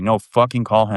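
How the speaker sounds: ordinary delivery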